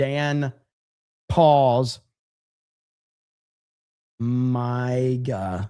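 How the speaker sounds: very slow, deliberate, word by word, Miga drawn out. Reading out a viewer's name so it isn't misheard: said very slowly. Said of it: "I had to say that one slow".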